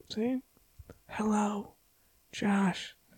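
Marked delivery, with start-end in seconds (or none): 1.1-2.9 hushed whisper, much quieter. Playing a caller phoning about a car's extended warranty, whispered. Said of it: "You have to whisper that".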